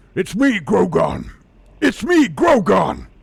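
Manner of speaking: booming, swooping, slow orc bellow, marble-mouthed. Trying out a new orc character's voice, Grogon orc voice with a mouthful of marbles. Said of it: "mouthful of marbles thing".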